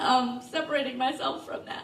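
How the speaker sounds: moved, feeling welling up. Talking about leaving an art studio and the women there: getting emotional.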